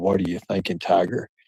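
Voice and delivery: put-on whisper. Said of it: "ready to whisper in my ear".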